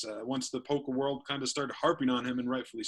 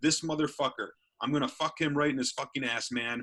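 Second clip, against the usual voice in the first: acted-out, explosive, angry outburst. Retelling how a player finally explodes on stream, acting out the explosive outburst. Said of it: "finally kind of explodes on the stream".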